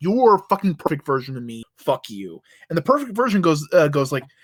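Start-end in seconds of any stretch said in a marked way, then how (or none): 0.0-2.4 mock, angry, pissed-off outburst. Retelling a comic scene where one Moondragon is pissed off: imitating a pissed-off outburst. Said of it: "pissed off at this perfect version".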